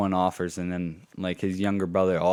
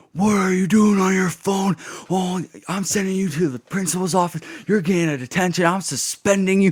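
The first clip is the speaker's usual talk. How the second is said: very high, shrill, loud teacher's scolding yell; 12 semitones higher, 7 dB louder than usual. Retelling how a study hall teacher caught them on their phone: imitating someone yelling. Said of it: "he yelled at me".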